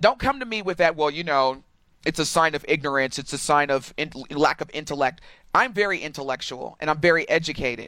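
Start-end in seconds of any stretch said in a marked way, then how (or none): none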